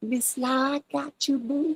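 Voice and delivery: very high, imitated American dialect voice.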